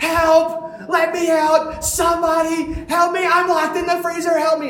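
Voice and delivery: put-on very high, shrill, loud, desperate panicked screaming. Retelling being locked in a freezer, reenacting screaming for help. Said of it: "I'm screaming as loud as I can".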